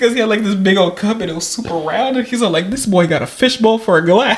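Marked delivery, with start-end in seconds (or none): 2.7-4.4 mocking, jeering, scornful and teasing tone. Retelling a comedy show bit: imitating Aries Spears mocking someone. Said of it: "he's all making fun of him".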